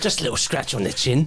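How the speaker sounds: bear character voice. Voicing a bear who asks for a scratch on the chin: bear character voice. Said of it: "Why am I talking like that again?".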